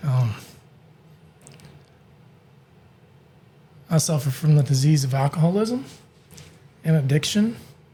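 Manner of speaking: tearful, teary-eyed voice. Answering an interviewer's question about your personal life, tearful. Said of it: "the tears you see right now".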